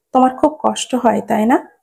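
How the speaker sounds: ordinary delivery, nothing marked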